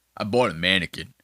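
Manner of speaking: very low, deep manly voice, self-satisfied. Mocking a guy in a clip who bought a mannequin: imitating a very manly voice. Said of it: "the manliest voice".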